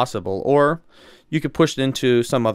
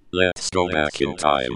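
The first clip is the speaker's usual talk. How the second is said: robotic voice, lower pitch; 8 semitones lower than usual. Answering a request to tell the history part: robot voice. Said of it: "Mister Robot Voice".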